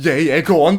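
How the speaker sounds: play-acted heavy sarcasm. Retelling own reply to a man giving directions: imitating own sarcastic reply. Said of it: "I was probably being really sarcastic".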